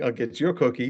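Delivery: normal talking voice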